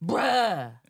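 furious, very loud bruh. Saying the word again on request: mock angry "bruh". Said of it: "Let me do it again".

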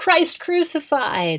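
very high, sudden shout. Imagining Paul interrupting a lecture, imitating Paul shouting. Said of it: "he just shouts out".

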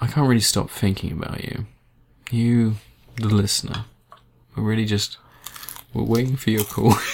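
playfully shy. A host speaks into the microphone to the listener, coy. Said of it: "I'm gonna coyly start speaking to the microphone".

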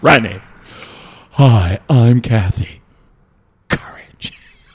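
timid, scaredy-cat storybook lion character voice. Father imitates Kathy, as his child pointed out, in a Cowardly Lion voice. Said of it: "the voice that you use to impersonate Kathy".

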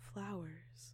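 quiet whisper. Entering the room and noticing the smell, whispered to herself. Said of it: "she whispered to herself".

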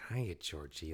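very soft, calm, creepy voice. Retelling an actor's audition, imitating it: creepy but calm Pennywise voice. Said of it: "kinda creepy, but, like, calm".

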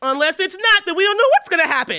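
shrill, very high, loud, anxious neurotic fretting. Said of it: "the other side is completely neurotic".

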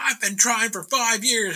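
mock irritated tone. Retelling how people reacted to the story: imitating someone pissed off. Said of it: "they got super fucking pissed off".

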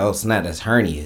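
ordinary talk

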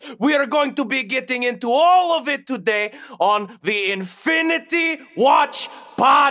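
hint of Eastern European accent. A podcast host introduces the episode, with a slight Eastern Bloc accent. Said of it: "Eastern Bloc country accent at the end there".

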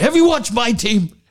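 mock screaming, very high-pitched. Retelling how a radio host lost it at a caller: imitating someone screaming. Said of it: "then started screaming".

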